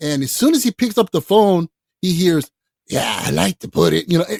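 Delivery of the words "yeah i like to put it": rough, creaky, grinding put-on voice. Retelling a friend's phone call from the actor, imitating Harvey's distinctive voice. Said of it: "he hears the voice wanting to put in a claim".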